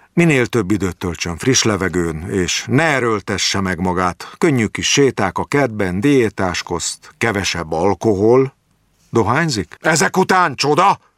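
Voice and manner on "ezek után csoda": indignant, wounded, offended tone, pitched higher. A patient answers his doctor's question, offended. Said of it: "Kérdezett vissza sértetten Jáki".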